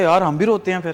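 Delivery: ordinary delivery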